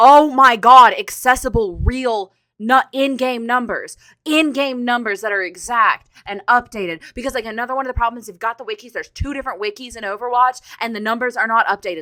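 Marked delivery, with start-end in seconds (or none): 0.0-7.0 very loud, drawn-out excited screaming. A speaker discussing Overwatch wikis and in-game numbers: screaming. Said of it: "I'm so sorry for screaming".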